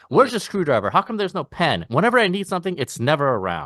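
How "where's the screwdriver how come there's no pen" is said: high-pitched swinging holler. Recalling a dad who yelled when things were missing: imitating dad yelling. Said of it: "My dad always used to yell about".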